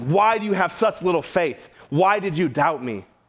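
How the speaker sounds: judgmental, condemning rebuke with pitch pushed up. Showing how the speaker once read this verse, mock-condemning voice. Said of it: "I read this in such a condemning voice".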